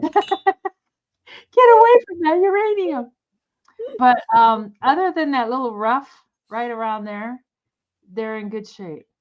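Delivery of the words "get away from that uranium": pretend panicked scream, higher and louder. Joking about glowing uranium glassware: mock screaming as a thyroid. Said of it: "your thyroid just screaming".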